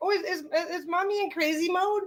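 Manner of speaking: high-pitched pet dog voice. Voicing the dog's thoughts as he watches: voicing Bruno the dog. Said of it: "He's like".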